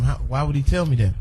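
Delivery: ordinary talk, nothing marked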